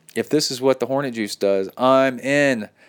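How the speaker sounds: ordinary delivery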